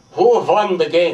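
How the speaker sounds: put-on European accent. Speaker retelling his father's question on a phone call, in a european accent. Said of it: "He had that good European accent".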